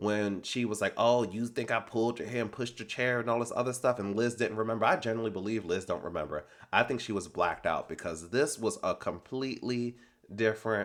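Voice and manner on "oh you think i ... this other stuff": plain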